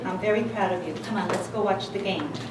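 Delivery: low, quiet, distracted, indifferent voice. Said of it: "That's nice, honey".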